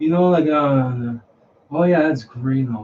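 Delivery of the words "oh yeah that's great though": tone sinking at the end on though. Showing how tonality keeps going down at the very end: falling tone on though. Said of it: "the tonality at the very end keeps going down. I'll show you".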